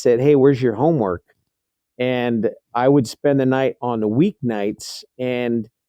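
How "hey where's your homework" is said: normal talking voice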